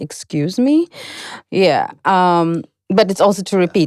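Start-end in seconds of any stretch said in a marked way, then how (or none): 0.0-0.9 ironic, mocking, sarcastic excuse me. English lesson on asking someone to repeat: sarcastic 'excuse me'. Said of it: "that might sound more ironic, more sarcastic, like".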